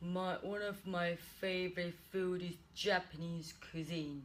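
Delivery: low, flat, droning, unvaried monotone. Showing exam candidates how not to answer: flat monotone. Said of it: "Don't speak with a monotone".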